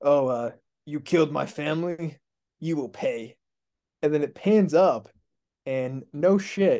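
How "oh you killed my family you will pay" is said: small, slightly scruffy-sounding voice. Describing a scene that pans up to reveal Vin Diesel: Vin Diesel's little scruffy voice. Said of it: "little scruffy voice".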